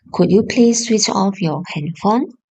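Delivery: ordinary delivery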